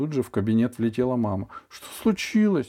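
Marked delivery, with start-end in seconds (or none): 1.7-2.7 alarmed, frightened, very high-pitched delivery. A mother rushes into the doctor's office and asks; frightened question. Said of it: "испуганно спросила она".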